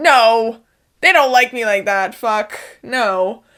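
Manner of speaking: loud, emphatic, blurted outburst.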